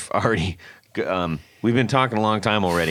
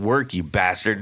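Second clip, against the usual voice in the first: mock rage boiling over in sudden outburst. Retelling a guitarist smashing his guitar into a broken amp, imitating an angry outburst. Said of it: "Beck's getting really pissed".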